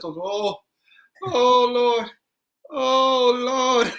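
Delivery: high, drawn-out groaning. Retelling the aunt reaching the last step: Eddie Murphy's aunt groaning. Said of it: "she finally hit the last step".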